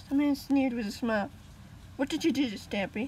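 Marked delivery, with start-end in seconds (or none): 2.0-3.1 forceful, insistent, demanding. A boy with a drawn sword confronts a sneering man, demanding. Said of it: "the boy demanded".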